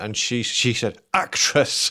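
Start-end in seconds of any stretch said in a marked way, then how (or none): 1.1-1.9 put-on stern tone, higher pitch. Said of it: "really stern about it".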